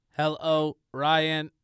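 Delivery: mechanical robotic delivery. Co-host greets the host Ryan while play-acting, in a robot voice. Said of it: "that was his robot voice".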